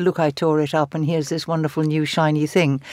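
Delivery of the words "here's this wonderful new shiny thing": normal talking voice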